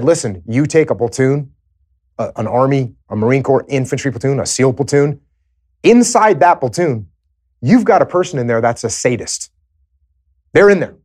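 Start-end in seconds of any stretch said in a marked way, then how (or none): none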